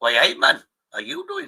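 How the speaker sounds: very high, sing-song, bungled Welsh accent. Retelling a man's greeting on his patrol: failed Welsh accent. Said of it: "I can't do a Welsh accent".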